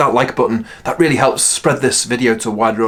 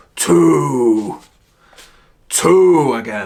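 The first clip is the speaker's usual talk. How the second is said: silly T-Rex dinosaur voice. Demonstrating a silly voices game for reading sight cards, in a T-Rex voice. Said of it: "You could be like a T-Rex".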